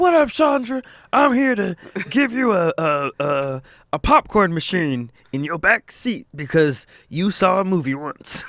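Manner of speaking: rasping, rough-edged delivery. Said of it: "Exhibit had a very rough and raspy voice".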